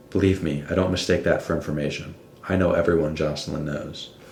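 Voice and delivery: ordinary talk, nothing marked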